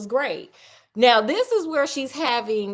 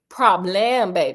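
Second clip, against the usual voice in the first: fake Creole accent, pitched lower; 4 semitones lower than usual. Repeating a word from the story for a listener: put-on Creole accent. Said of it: "that sounded Creole".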